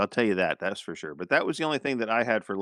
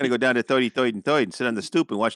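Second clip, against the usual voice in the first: New Jersey accent slipping back in. Speaker falls back into their own New Jersey accent. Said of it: "I've fallen into back into my Jersey".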